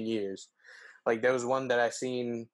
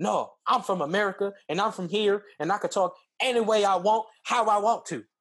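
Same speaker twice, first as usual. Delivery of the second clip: play-acted high, loud, wild yelling; 9 semitones higher, 5 dB louder than usual. Retelling how a woman answered a calm Nigerian man, imitating her yelling. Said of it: "her just like yelling at him like crazy".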